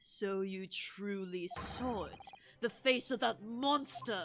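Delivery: put-on French accent. Voicing a character in a drama, with a French accent. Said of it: "committing to this French accent".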